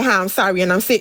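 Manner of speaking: usual speaking voice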